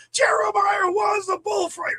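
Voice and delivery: mock top-of-the-lungs scream, very high, drawn out. Retelling screaming out in a quiet church as a child: imitating a scream. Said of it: "And I just screamed".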